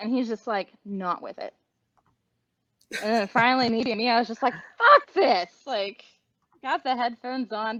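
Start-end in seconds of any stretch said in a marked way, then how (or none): 4.8-5.5 loud, very high blurted outburst. Retelling an exclamation made while wearing headphones: imitating own loud outburst. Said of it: "I said it louder than I meant to".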